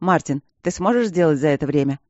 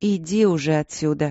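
tired, weary, worn-out and dismissive tone. Reading Victoria's reply to Martin, who asked her not to be offended; tired. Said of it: "устало ответила она".

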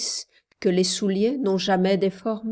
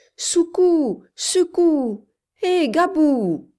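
clear, very high, loud drawn-out call at full force; 9 semitones higher, 5 dB louder than usual. Reading Yuma calling for Gabriel in the dark, calling out with full force. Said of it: "de toute la force de sa voix claire".

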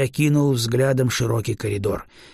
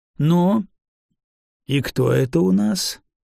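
perplexed, puzzled, wondering, slow and raised tone; 5 semitones higher than usual. A man looks over the disheveled body dragged before him, puzzled. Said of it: "озадаченно поинтересовался Грон".

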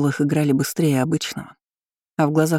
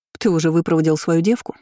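ordinary delivery

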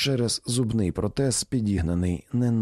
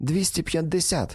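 high, gleeful, delighted, joyful voice; 8 semitones higher than usual. A woman at a card game lays down her aces, joyful exclamation. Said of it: "радісно вигукнула вона".

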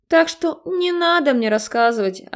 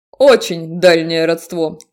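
snorting voice; 5 semitones lower, 4 dB louder than usual. A man answers the narrator's explanation, snorting. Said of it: "фыркнул мужик".

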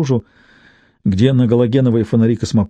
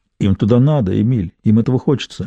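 plain reading voice

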